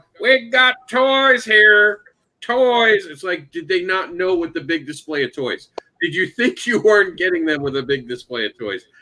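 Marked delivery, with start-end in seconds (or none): 0.2-3.1 very slow, high-pitched, drawn-out vendor holler. Complaining about a neighbouring seller with a megaphone, mimic the megaphone hawker call. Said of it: "someone with a megaphone over next to you going".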